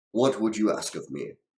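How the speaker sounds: big, loud, resounding booming voice. Narrating a game scene, voicing a voice only the player can hear, booming. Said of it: "a booming voice asks".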